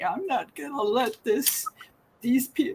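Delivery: really emotional, words faltering and breaking off. Speaker telling their story to another speaker who offers a break, getting really emotional. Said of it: "sorry, I get really emotional".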